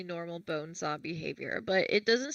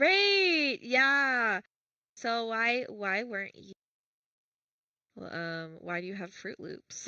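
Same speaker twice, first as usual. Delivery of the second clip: slow, fake-nice, phony polite public voice; 3 semitones higher than usual. Describing the villain as an abusive person: imitating Jack's fake-nice public act. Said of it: "acting how these kinds of people will act when they're, like, in public".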